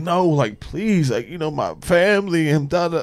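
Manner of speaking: earnest, imploring, begging tone. Imitating how a man pleads with a woman: imitating someone pleading. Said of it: "listen to the way that he is pleading to her".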